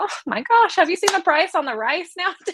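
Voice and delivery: high, chirpy, bright chatty tone. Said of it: "I'm like".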